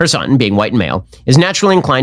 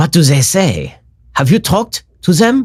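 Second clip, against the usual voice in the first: put-on bad German accent in old film style; 4 semitones higher than usual. Mocking how the pronouns sound: bad 1940s movie german accent. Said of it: "an actor from nineteen forties doing a bad German accent".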